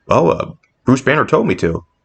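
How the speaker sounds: ordinary delivery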